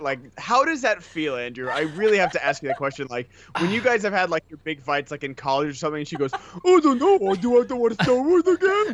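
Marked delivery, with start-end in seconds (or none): 6.6-8.9 very high, loud, dopey troll voice. Speaker asks Andrew about his big fights with her, doing Nikki's dumb troll voice. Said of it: "miss Nikki's Nikki's dumb voice".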